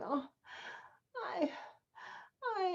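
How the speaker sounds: breathy, whispered moan. Showing an actor another way of crying: moaning. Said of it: "Maybe you're moaning".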